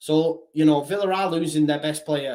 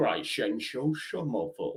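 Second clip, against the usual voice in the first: put-on Scottish film star voice, lower and quieter; 4 semitones lower, 8 dB quieter than usual. Reading out a viewer's chat name: Sean Connery voice. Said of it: "I sound like Sean Connery when saying Somerville".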